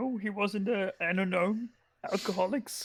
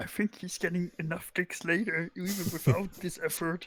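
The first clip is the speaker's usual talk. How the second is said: hushed, under-the-breath whisper in a character voice. Whispering back an answer in character: whispering back in character. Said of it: "I whisper back".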